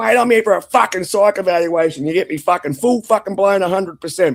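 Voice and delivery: acted heated rant. Retelling what they said at the hospital psych evaluation: imitating own past ranting. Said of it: "ranting and raving".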